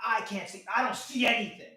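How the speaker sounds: very loud, shrill, drawn-out yell. Retelling a courtroom exchange with a prosecutor: imitating a prosecutor yelling. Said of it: "The prosecutor starts yelling at me".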